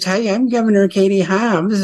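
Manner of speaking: put-on high-pitched Valley girl speech. Showing how the governor talks, speaker does a Katie Hobbs Valley girl impression. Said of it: "she talks like this".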